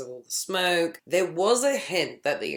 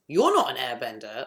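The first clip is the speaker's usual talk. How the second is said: mock-angry snap, put-on anger, lower pitch; 3 semitones lower than usual. Imagining a random kid confronting the speaker, acting out a pissed-off retort. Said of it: "like in a pissed off way".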